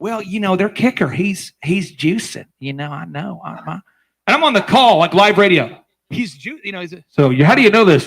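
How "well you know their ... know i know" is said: exaggerated, hushed, camp cowboy voice.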